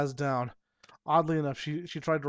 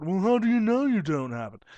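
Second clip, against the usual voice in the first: snobbish, haughty, snooty man's voice, pitched up; 5 semitones higher, 4 dB louder than usual. Retelling an exchange with a customer, doing him in a snooty man voice. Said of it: "It's the Snooty Man voice".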